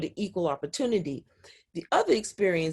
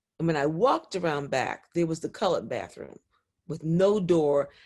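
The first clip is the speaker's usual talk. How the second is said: plain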